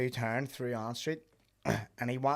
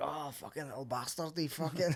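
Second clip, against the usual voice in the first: put-on Scottish accent, quieter; 2 semitones higher, 6 dB quieter than usual. Retelling what some scottish people said when they came up, imitating a scottish accent. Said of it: "They come up and they were Scottish".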